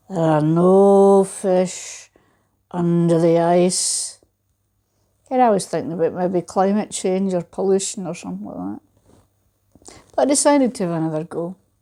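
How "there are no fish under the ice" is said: very slow, big booming voice, drawn-out "no". Speaker retells casting a line through the ice when a voice spoke, big booming voice. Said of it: "A big booming voice said".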